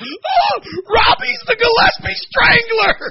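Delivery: put-on laughing while talking. Recounting a prank, the speaker acts out his brother's words: imitating someone laughing. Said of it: "my brother Rob starts laughing".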